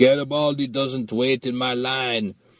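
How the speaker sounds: slow broken English, words laid out one by one. Retelling what a laughing guy told them, the speaker quotes him in broken English. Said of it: "saying in broken English".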